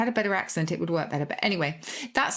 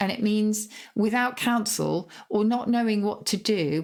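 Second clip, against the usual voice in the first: ordinary talk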